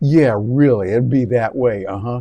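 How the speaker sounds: sarcastic delivery. Showing what another voice can do for e-learning content, sarcastic. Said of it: "kind of a sarcastic sound".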